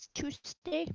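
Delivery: put-on whispered, hushed, breathy little-old-lady voice. Repeating how someone just said tuesday, imitating an old lady voice. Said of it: "You say it like an old lady".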